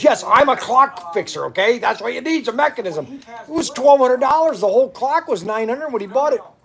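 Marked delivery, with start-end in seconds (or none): 0.0-3.2 angry, irritated, sharp delivery. Retelling how the clock fixer replied after getting really mad: imitating an angry clock fixer. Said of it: "for some reason he got really mad".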